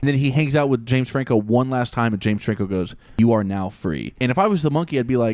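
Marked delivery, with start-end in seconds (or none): 3.2-4.1 condescending, patronizing, talking-down voice. Retelling a film's ending: patronizing James Franco voice. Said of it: "in that patronizing voice".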